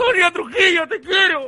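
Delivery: overcome with feeling, pitched high. Speaker calls out affectionately to Sonia Trujillo, overcome with emotion. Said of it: "perdón, es que me emociono".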